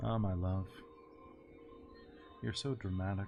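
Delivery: hushed, very quiet, private-sounding voice. Narrating to the listeners, the speaker voices a man in a very quiet voice. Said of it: "a very quiet voice that's obviously not meant for you".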